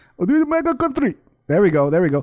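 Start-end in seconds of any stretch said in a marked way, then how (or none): 0.3-1.2 put-on Nigerian accent, very high pitch. Trying out how a Nigerian would say a phrase, imitating a Nigerian accent. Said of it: "It's probably pretty close to Nigerian".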